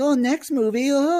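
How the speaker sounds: very high, slow, upset fretting voice. Retelling how Big Bird should answer a question: imitating Big Bird getting upset and worried. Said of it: "get all upset and worried".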